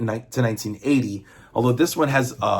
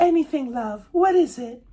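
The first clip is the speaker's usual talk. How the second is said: very high, pitched-up put-on girl voice; 14 semitones higher than usual. Retelling a story scene where the woman answers Peter, Felicia in put-on girl voice. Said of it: "That's my girl voice".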